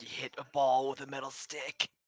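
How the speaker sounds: whispering. Whispering an explanation to a companion from the shadows: whispering from the shadows. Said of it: "I whisper from the shadows".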